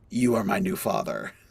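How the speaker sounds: super deep, very low voice. Quoting an infant who had a super deep voice: super deep voice. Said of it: "he had this super deep voice".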